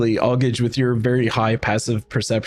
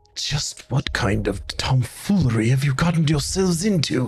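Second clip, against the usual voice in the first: secretive stage whisper, as if leaning in; 3 semitones higher than usual. Voicing Rictavio leaning down to a player's ear: whispering as Rictavio. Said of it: "leans down and whispers into your".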